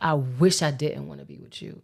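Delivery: said with conviction. Retelling own words said on the phone to him: imitating saying it with conviction. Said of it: "I said it with, like, conviction".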